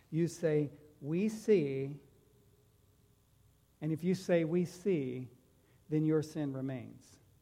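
slow, deliberate read-aloud, each word separate. Reading a scripture passage aloud to listeners, reading slowly on purpose. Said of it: "I'm reading this slow on purpose".

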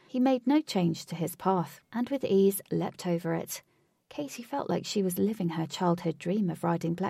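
ordinary delivery, nothing marked

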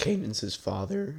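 voice cracking. A speaker explains a point to listeners, mouth dry, voice cracking. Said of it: "Sorry, voice crack. My mouth is very dry".

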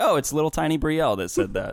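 ordinary talk

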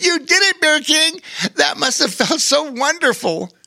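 very high, thrilled, excited cheering voice. Bobo Chico claps his paws and speaks to Bear King; excited. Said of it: "said excitedly".

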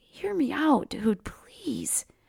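quiet, soft, slow pleading tone. Narrator reads a man's plea after he wipes his tears away, quietly pleading. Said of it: "quietly pleaded".

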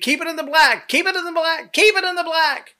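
very high, shrill shouted yell, repeated. Retelling a fire chief's order while driving the fire truck: imitating someone yelling. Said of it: "he yells to me".

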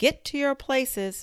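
very high, shrill, thunderous, roaring shout. The Queen calls out to everyone at the game; thunderous shout. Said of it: "shouted the Queen in a voice of thunder".

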